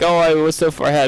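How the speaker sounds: usual speaking voice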